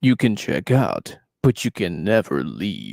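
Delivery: deep, swooping storyteller narrator voice. Repeating the line to show off a narrator voice. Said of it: "that's my best narrator voice".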